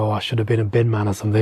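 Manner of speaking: put-on whisper. Retelling what a band member said while fans mobbed them: imitating a whisper. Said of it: "whispered to me".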